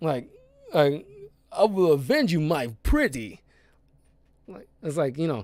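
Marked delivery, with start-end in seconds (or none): 1.5-3.4 deliberately terrible put-on voice with swooping pitch. Describing how a man talks, doing a terrible Christopher Walken impression. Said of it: "That was a terrible uh Christopher Walken impression".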